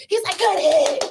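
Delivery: loud, high-pitched shouting. Imitating a coach on the sideline after a good hit: imitating a coach shouting loudly. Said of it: "real loud on the sideline".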